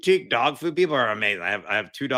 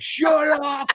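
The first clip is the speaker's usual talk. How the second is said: mock shrill, high, loud fed-up yell; 6 dB louder than usual. Describing calls with robotic phone assistants, acting out yelling at one. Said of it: "And I'm just I'm just yelling".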